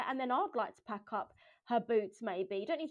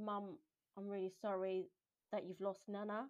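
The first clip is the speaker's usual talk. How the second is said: mock-calm tone, quieter; 2 semitones lower, 8 dB quieter than usual. Recalling a car ride, the mother repeats what her child said, imitating a calm tone. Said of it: "she said it quite calmly".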